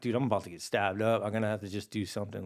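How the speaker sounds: ordinary talk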